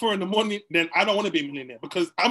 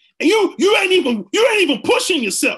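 motivational-speaker voice, much higher and louder; 10 semitones higher, 8 dB louder than usual. Describing a motivational voice he heard, doing an E.T. the hip-hop preacher impression. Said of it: "those motivational voices".

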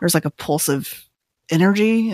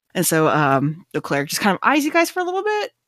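usual speaking voice

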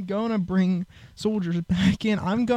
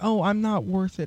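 put-on crying, weeping voice; 4 dB quieter than usual. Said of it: "I had to be basically crying, saying".

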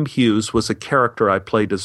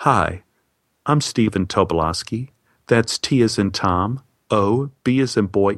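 slow, deepened, deep baritone voice. Retelling giving own name at the hospital desk: imitating own softened baritone. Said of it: "soften my voice to match his baritone".

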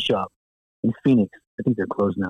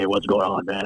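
super low, laid-back, loose voice; 2 semitones lower than usual. Describing first meeting a cigar-smoking guy: imitating a very low voice. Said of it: "voices like 3 octaves lower than you'd think".

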